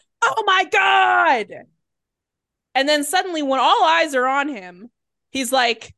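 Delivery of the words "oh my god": very high shriek, the word god drawn out. Recounting witnesses' account of a man standing up, retelling a scream at full volume. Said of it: "screamed at the top of his lungs".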